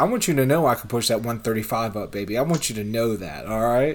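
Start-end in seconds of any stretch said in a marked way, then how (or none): none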